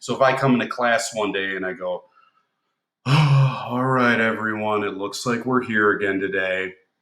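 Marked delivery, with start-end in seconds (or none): 3.0-6.7 sad, heavy, subdued, with drawn-out all. Teacher showing the class an example of tone: somber gloomy tone. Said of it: "That's kind of a somber tone".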